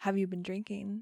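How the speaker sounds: ordinary talk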